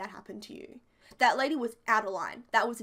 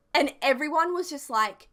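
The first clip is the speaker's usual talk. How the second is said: ordinary talk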